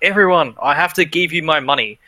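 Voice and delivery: calling out loudly. Voicing a wealthy noble who suddenly calls out to the market: crying out to everyone. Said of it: "he starts crying out".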